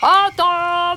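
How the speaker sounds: big, powerful alpha-wolf voice. The narrator voices Papa Loup calling the pack to the table, big alpha voice. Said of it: "il appela la meute de sa grosse voix d'alpha".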